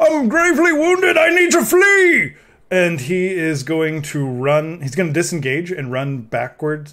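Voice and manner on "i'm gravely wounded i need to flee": shrill, very high-pitched yelled cry. Player voicing his gravely wounded character calling out in Common, shouting. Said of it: "he's just gonna shout in common".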